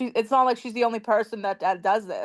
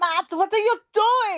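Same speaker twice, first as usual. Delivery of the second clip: very high-pitched put-on voice; 11 semitones higher than usual. Act out Jasmine yelling at Matt about the baby, in an Arnold Schwarzenegger voice. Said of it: "Why did I sound like Arnold Schwarzenegger?".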